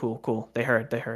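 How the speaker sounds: usual speaking voice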